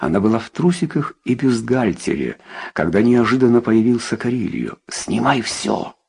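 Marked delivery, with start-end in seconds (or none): 4.9-5.9 husky, creaky, hoarse, rough voice. A man suddenly appears before a woman and commands her, hoarse voice. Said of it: "сказал он хриплым голосом".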